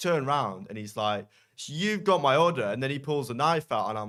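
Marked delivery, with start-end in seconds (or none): 1.7-2.6 put-on full-on shout, pitched high. Retelling a guy with a knife shouting about his order, imitating a guy shouting. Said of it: "properly shouting".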